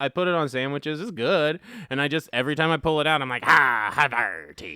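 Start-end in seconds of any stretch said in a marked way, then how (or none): 3.4-4.8 very low, deep pirate voice. Retelling what gets said on pulling out the cheese: pirate voice from the SpongeBob opening. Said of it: "I turn into fucking the beginning of SpongeBob".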